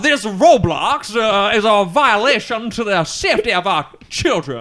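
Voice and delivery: put-on Louisiana accent. Joking about a Louisiana lawsuit in court: put-on Louisiana accent. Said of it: "all I can think of is, like".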